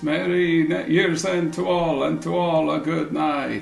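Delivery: reverberating echoey voice. Storyteller describing the scene as snow swirls and a voice is heard, echoing voice. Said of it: "you hear an echoing voice".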